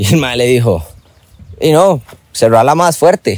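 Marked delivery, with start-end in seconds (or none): 1.6-3.4 mock needling sarcasm, raised voice. Retelling a man's remark after a door was slammed: retelling a sarcastic remark. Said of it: "en son de sarcasmo".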